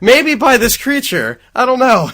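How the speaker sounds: very high, shrill, very loud booming belted delivery. Imitating a game character running in: imitating Jill's line. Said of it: "She's like".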